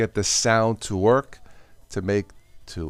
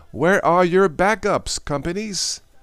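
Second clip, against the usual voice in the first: very high-pitched, loud yelling; 9 semitones higher than usual. Speaker asking companies a question during a tech talk, yelling. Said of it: "I don't know why I'm yelling".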